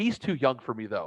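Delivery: ordinary talk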